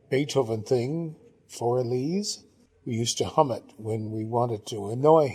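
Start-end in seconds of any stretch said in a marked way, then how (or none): none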